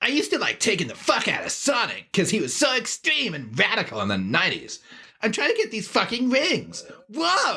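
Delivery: high, cracking voice with wild upward swoops. Speaker doing his best impression while playing a Sonic game, Sonic going through puberty. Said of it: "You sound like Sonic going through puberty".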